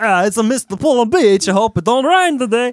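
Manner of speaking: put-on European accent. Retelling how a european guy always greeted him, imitating a european guy's accent. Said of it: "that was the voice that I was doing".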